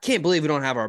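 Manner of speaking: play-acted, animated, exasperated, disgusted outburst of disbelief. Retelling the quarterback's reaction on the sideline, imitating animated disgust. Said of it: "being all animated, like in disgust".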